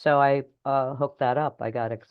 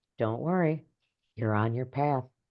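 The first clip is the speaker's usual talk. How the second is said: small, tiny, soft, quiet reassuring voice; 4 dB quieter than usual. Speaker acting out two inner voices, now the tiny, soft voice answering. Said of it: "the tiny little soft voice says".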